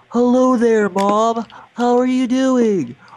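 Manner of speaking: talking with nose clamped. On TV, speaker greets Mom while talking with nose clamped. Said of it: "I have my nose clamped so I can talk like this".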